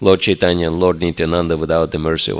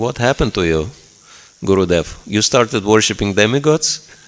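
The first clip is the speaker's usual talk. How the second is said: put-on delivery with a sarcastic edge; 3 semitones higher than usual. Retelling own question to the spiritual master: retelling own sarcastic question. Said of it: "in a kind of sarcastic way".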